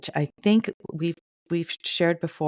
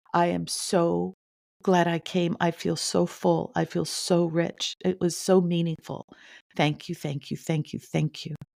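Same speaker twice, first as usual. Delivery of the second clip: mock ugly-crying voice. Retelling a woman's thanks to her at church, imitating ugly crying. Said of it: "now she's ugly crying".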